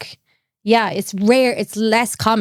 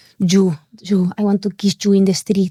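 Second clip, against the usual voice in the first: put-on Argentinian accent. Imitating how Argentinian men flirt: imitating an Argentinian accent. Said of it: "I love that accent".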